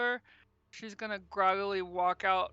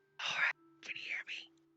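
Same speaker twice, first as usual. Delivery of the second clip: hushed, secretive whisper. Voicing a character whispering into a magic ring: whispering in character. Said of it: "she's gonna whisper into the ring".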